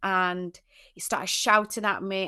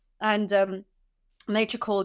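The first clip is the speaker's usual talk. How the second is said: usual speaking voice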